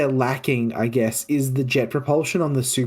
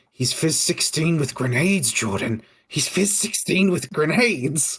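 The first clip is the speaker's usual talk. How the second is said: ugly, horrible gremlin-like voice. Acting out the voice in the back of your head, addressing Jordan in a horrible Rob Cantrell gremlin voice. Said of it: "the horrible fucking gremlin voice of Rob Cantrell".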